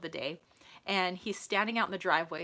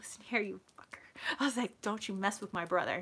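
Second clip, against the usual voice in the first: put-on muttering under the breath. Retelling confronting someone trying to hurt her brother: retelling muttering under breath. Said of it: "under my breath".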